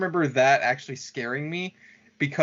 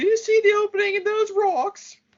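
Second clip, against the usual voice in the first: put-on very high, shrill, weird almost-British accent; 5 dB louder than usual. Describing a creepy girl in an episode, quoting her in a weird almost-British accent. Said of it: "has this weird like almost British accent".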